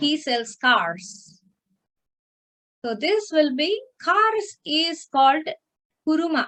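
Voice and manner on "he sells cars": slow, deliberate, model-sentence reading.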